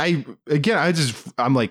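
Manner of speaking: usual speaking voice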